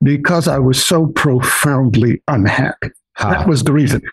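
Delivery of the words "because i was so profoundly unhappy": put-on British accent. Quoting a British guy's answer about why he studied happiness for 60 years, imitating a British accent. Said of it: "And he said in his British accent".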